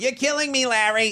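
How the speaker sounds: mock, high, nasal, whiny American accent.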